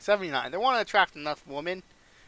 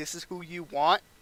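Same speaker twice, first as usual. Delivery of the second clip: normal talking voice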